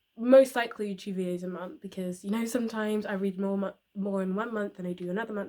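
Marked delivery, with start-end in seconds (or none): 4.0-5.5 very fast, rushed rambling delivery. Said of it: "I'm speaking very quickly".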